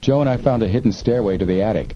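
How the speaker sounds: plain reading voice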